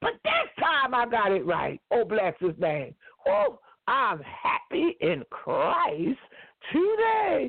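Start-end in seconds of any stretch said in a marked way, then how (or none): 3.3-7.5 very slow, drawn-out, high and joyful. Speaking of falling down and getting back up, sound joyful. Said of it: "Did you hear it in my voice?".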